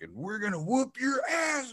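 put-on pumped-up scream. Recalling cheering after his team scored on the opening drive, retelling a pumped-up scream. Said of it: "And I'm screaming".

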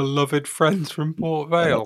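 heavily sarcastic. Naming another football club in conversation: very sarcastic. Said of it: "I say that's very, very sarcastically".

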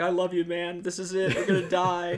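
crying, emotional, high, loud, tearful voice. Retelling a childhood camping scare with a cousin: imitating past crying. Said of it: "devolved into both of us crying, being like".

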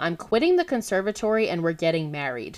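ordinary delivery

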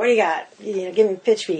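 real New York manner of speaking. Retelling what a book agent said at a meeting, imitating a new york agent. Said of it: "she's real New York".

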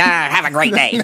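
put-on grudging, cranky, crotchety old-man grumble. Joking about a grudging well-wish: crotchety old man voice. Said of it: "I'm the crotchety old man that's like".

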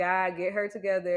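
ordinary delivery

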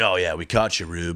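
put-on condescending voice. Quoting a movie character's line to rube: imitating a condescending line. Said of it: "he does it so condescending".

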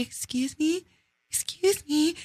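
meek, soft, very high little pleading voice. Retelling asking a man spreading his legs on the train to move: imitating own meek request. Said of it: "meekly asking him to move".

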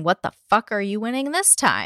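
plain

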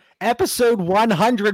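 voice breaking with excitement. Podcast host opening the show's hundredth episode: voice cracking. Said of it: "My voice even cracked right there".

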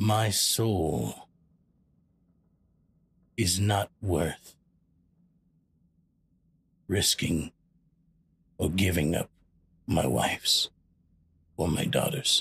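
grave, no-nonsense, very serious, stern fatherly voice. Player voices his father character turning to everyone, very serious dad tone. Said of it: "very seriously and very, like, very, like, dad".

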